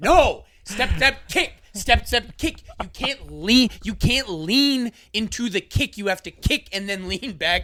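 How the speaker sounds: acted-out, high-pitched, in-your-face screaming. Retelling a dance partner's instructions during a dance: imitating someone screaming. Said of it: "she's just screaming in my face".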